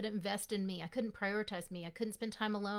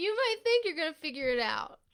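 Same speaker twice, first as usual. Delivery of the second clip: very loud, higher-pitched, laughing through words; 8 semitones higher, 8 dB louder than usual. Explaining how people get stuck in their thoughts, laughing while talking. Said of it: "I'm sorry, I'm laughing".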